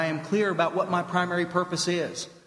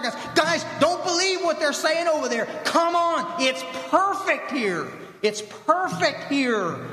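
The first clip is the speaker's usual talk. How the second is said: put-on yelling from a distance; 10 semitones higher than usual. Retelling how a man yells back through the fire: imitating someone yelling. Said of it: "he's yelling back through the fire".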